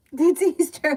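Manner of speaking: loud, high, bellowing yell. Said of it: "My brother and I, till this day, have this".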